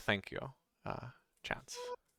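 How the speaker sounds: near-whispered, calm, composed, excitement held back. Accepting a staff offered to him, the character thanks the giver; calm, holding back excitement. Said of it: "very calmly take the staff and say".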